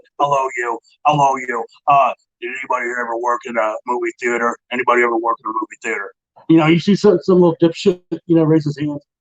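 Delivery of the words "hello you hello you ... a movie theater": put-on storybook troll character voice. Retelling how a drill instructor questioned the recruits, in a troll voice. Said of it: "it's like the troll voice".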